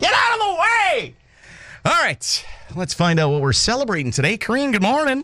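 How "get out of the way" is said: yelling voice. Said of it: "People yelling at me".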